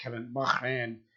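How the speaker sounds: put-on throaty French pronunciation. Showing listeners the way you say a podcast guest's name, with a phlegmy french pronunciation. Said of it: "added more phlegmy French".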